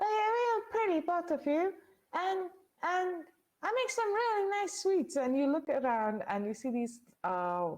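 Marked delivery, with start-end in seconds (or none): 0.0-5.2 tiny, squeaky, very high fairy voice. Storyteller voices a fairy greeting the two players, in a squeaky fairy voice. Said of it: "greeted by this really squeaky voice".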